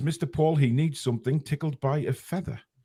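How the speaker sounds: usual speaking voice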